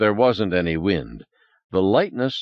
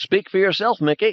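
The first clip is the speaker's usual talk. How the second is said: very high, cartoonish, squeaky helium voice; 12 semitones higher than usual. Reading a story aloud, a character breathing helium: squeaky helium voice. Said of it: "Ted squeaked".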